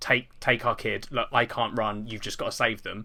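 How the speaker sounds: ordinary talk, nothing marked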